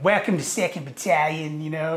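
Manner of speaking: heavy put-on Boston accent. Quoting a sergeant major welcoming him to 2nd battalion, in a thick boston accent. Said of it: "like thick, like Boston accent".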